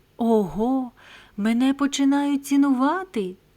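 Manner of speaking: high, joyful cry of delight. Narrator voicing a young playwright finding a sapphire, joyful exclamation. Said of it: "радісно вигукнув він".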